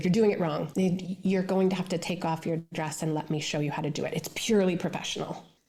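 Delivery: ordinary talk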